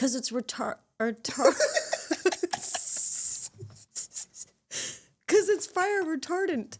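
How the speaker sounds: high, breathy giggling through the word.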